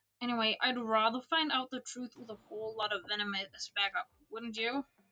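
ordinary delivery

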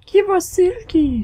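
squeaky, very high, loud put-on character voice. While playing a game together, one player speaks in a very high voice. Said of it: "very high voice".

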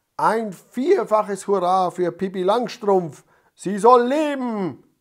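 very loud, high-pitched rallying shout. The fire chief calls out to the crowd, shouting. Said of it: "schrie der Feuerwehrhauptmann".

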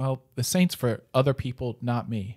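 ordinary delivery

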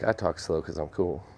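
plain

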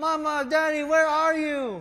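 put-on very high, loud crying-child wail. Describing a lost child calling for their parents, imitating a crying child. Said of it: "you will start crying".

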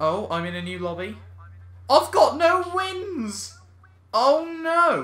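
astonished, caught off guard. Playing an online racing game and landing in a new lobby, surprised. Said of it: "You sound surprised".

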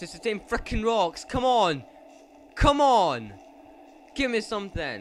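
scared, frantic, loud and panicky, swooping pitch. A player searching for a way forward in a game, scared and panicky. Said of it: "I'm too scared for this".

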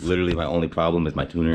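rushed, very fast talking. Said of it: "I'm talking too fast for myself".

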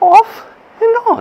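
bad, very high, loud, squeaky puppet-like monster voice. Mid-explanation of an exercise, doing a horrible Grover impersonation. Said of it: "that was a horrible Grover impersonation".

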